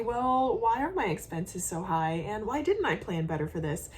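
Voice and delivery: ordinary talk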